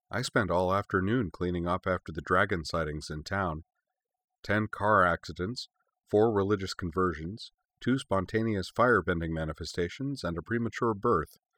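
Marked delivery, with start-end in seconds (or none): none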